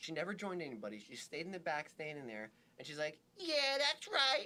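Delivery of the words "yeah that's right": very high, loud shout. Describing a woman at a graduation, the speaker acts out her yelling. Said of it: "yelling across the graduation?".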